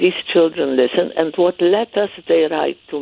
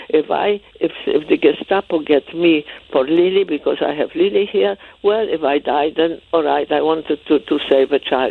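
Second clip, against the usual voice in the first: ordinary talk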